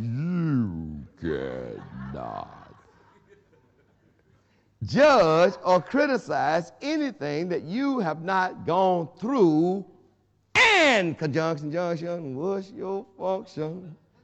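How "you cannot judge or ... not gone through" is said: very slow, drawn-out, each word laid out. Repeating a point, this time saying it slowly. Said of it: "I'm going to say it slowly this time".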